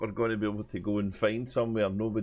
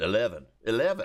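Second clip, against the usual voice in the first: put-on American accent; 10 semitones higher than usual. Recalling a comedy sketch about a voice-activated lift, the speaker quotes it: put-on American accent. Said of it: "Speaking an American accent".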